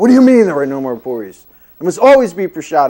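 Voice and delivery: angry, high, swooping, furious scolding yell. Retelling a teacher's angry reply about missing food: imitating a furious yell. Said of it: "yelling at me".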